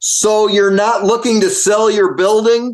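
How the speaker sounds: high, slow, very loud yelling.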